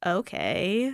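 soft, rising millennial-style okay. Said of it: "How does that go?".

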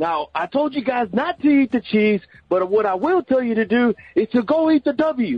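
mock coach voice, pumped up and rousing.

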